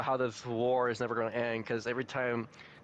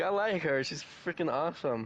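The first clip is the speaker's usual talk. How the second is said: ordinary talk, nothing marked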